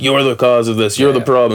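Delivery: ordinary delivery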